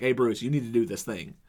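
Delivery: soft, bassy, plain straightforward delivery. Praising an actor's Nightwing performance, quoting his line to Bruce, imitating Nightwing's bass voice. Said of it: "put a little bass in his voice".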